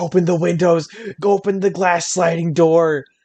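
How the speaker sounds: screaming, frantic and urgent. Retelling a panicked moment with a smoking oven: imitating someone screaming.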